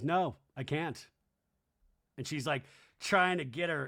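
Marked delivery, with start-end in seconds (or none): 0.0-1.1 mock level, expressionless, flat deadpan. Retelling a reality show scene, quoting one cast member: flat delivery. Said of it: "Mary just flatly goes".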